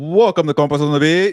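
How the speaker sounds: loud, high-energy, lively, energetic voice. Opening the show, imitating Fernando: imitating Fernando, energetic and lively. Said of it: "I'm trying to be Fernando".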